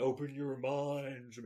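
low, very slow alien mutant voice.

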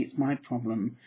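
ordinary delivery

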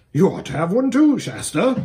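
snorting, horse-like delivery. Rolling on his back on the turf, he speaks to shasta, snorted. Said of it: "he snorted".

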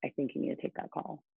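hushed, soft whisper. Retelling what a friend said during a self-tape: imitating a whisper. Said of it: "kinda whispered to me".

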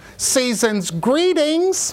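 mock very loud voice. Retelling how a woman turned toward the walking-away speaker, very loud voice. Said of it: "in a very loud voice".

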